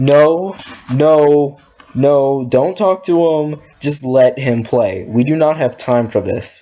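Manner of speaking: plain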